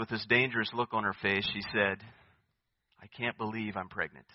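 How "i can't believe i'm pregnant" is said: very soft, hushed words under the breath. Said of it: "kinda under her breath".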